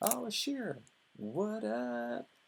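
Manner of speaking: very high, playful, sing-song voice.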